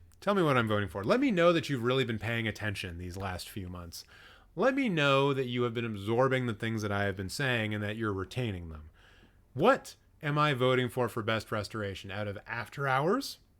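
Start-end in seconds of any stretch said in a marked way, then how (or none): 12.1-13.4 slow delivery, voice breaking and cracking. Asking chat to guess the vote for Best Restoration, voice cracking. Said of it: "I don't know why my voice just cracked".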